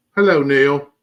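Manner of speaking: put-on British accent. Greeting a teddy bear character named Neil: put-on British accent. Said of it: "Whoever did that British accent, perfect".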